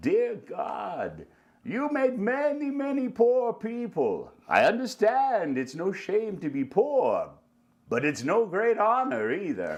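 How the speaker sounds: high, sing-song character voice, swinging pitch. Asked to do a little bit of Tevye, the speaker performs: Tevye voice. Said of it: "now do a little bit of Tevye".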